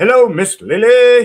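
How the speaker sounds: odd English brogue, very high and loud. Greeting a girl named lily every time, in a weird english brogue accent. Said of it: "we're kind of this weird English brogue accent".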